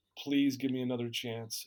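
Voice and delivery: put-on pleading, begging tone. Retelling kneeling to beg for another chance: retelling a plea. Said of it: "literally got on my knees and begged him".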